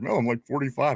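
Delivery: ordinary talk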